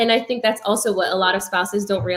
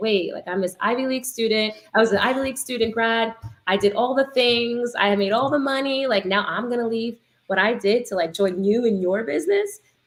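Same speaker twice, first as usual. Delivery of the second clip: usual speaking voice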